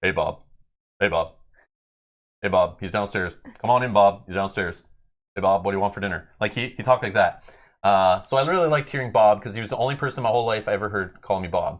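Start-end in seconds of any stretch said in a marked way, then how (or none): 0.0-6.3 deep, flat-toned, level, unvarying voice. Imitating a childhood friend's father calling for Bob, in a deep, straight tone. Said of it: "he had this very like deep and straight tone".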